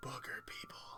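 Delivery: quiet, soft whisper. Voicing a character who utters a phrase in a quiet whisper. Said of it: "in a quiet, like, whisper".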